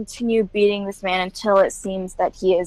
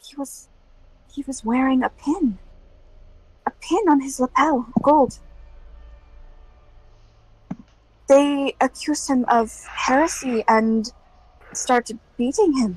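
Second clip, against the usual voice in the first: hushed whisper, higher; 5 semitones higher than usual. The narrator voices a woman who leans over to the listener, whispering. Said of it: "she leans over and she whispers".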